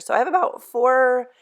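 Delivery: sudden high squeak slipping into the words. Cook explaining how the sauce is made when the voice squeaks. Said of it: "my voice just squeaked".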